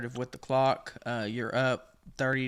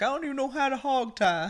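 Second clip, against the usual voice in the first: crying, sobbing voice pitched way up; 13 semitones higher, 4 dB louder than usual. Pitching a video idea, imitating an interview: mock crying. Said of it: "he's, like, crying".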